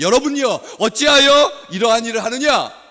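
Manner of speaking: deliberate, loud, high-pitched shout. Reading aloud the words after the verb "shouted", with deliberately loud shouting. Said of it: "이렇게 제가 일부러 크게 소리를 지릅니다".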